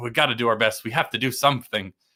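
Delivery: dead-serious, eager, very earnest tone. Retelling movie characters' lines, imitating earnest characters. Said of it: "they're all very earnest".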